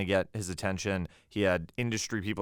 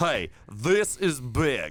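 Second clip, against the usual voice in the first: high-pitched, very slow, drawn-out delivery; 5 semitones higher, 4 dB louder than usual. Correcting the other speaker's impression of Cooper: Cooper impression. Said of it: "I think it's more like".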